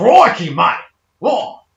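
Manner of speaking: over-the-top Australian accent, very loud. Mocking how others expect Australians to talk: exaggerated Australian accent. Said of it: "They want us to go".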